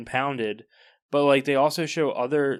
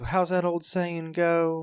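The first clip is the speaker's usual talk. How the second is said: put-on Southern accent with a twang; 4 semitones higher than usual. Imitating a movie detective's line: imitating a Southern twang. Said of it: "He's got, like, a Southern twang".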